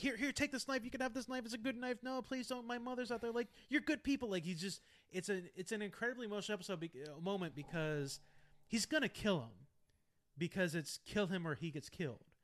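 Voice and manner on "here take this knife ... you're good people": mock pleading, much higher pitch, much faster pace. Retelling an episode where a shot man on the ground begs; imitating someone begging for life. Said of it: "like begging for his life".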